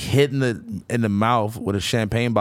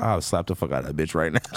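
low, hushed half-whisper under the breath; 5 semitones lower, 4 dB quieter than usual. Retelling what the speaker's companion said after another woman passed, imitating a half-whisper. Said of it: "the girl that I was with whispered".

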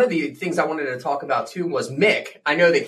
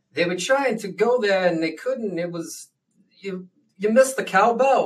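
put-on halting actor voice, higher; 5 semitones higher than usual. Trying an impression after being asked: Christopher Walken impression. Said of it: "I can try Christopher Walken".

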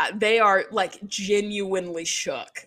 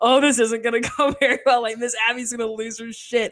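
put-on giggling voice; 3 semitones higher than usual. Recapping a scene from the show, the speaker imitates Maddie giggling. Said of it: "she's like giggling like".

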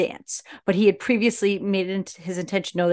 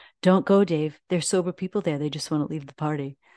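put-on grave, completely earnest, dead-serious delivery; 3 semitones lower than usual. Retelling a movie scene: imitating a serious delivery. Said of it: "goes so seriously".

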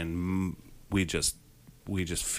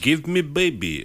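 loud, high-pitched, put-on Russian accent in a man's voice; 8 semitones higher, 6 dB louder than usual. Imitating the husband in a movie demanding a baby: imitating a Russian man. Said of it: "he sounds like it's like a Russian man".

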